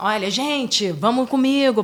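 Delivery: bright, upbeat, cheerful and effusive tone. Demonstrating how tone of voice sends a message: cheerful, effusive tone. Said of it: "Ou você vai estar mais alegre, ... mais efusivo e tal".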